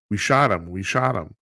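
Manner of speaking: normal talking voice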